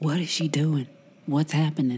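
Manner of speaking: hushed whisper in a character voice. Playing Rain, asking Darby what is going on: whispering in character. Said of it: "Rain whispers to Darby".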